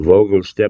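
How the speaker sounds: plain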